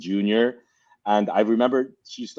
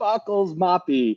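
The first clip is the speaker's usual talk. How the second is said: mock very high, thrilled, excited shout; 9 semitones higher than usual. Retelling greeting a friend when they met: imitating an excited yell. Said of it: "we'd be so excited and be yelling".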